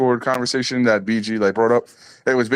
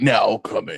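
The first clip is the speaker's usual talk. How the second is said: put-on movie trailer announcer voice. Retelling a comedian's stand-up bit: movie trailer guy voice. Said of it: "He does the movie guy voice really well".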